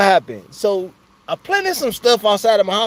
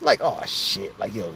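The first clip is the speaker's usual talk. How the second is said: normal talking voice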